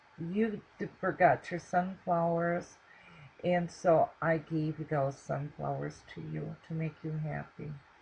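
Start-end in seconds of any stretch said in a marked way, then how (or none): none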